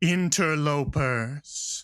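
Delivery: reverberating, echoing dragon voice. Narrator voicing a dragon rising from a well: thundering dragon voice. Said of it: "in a thundering voice that echoes".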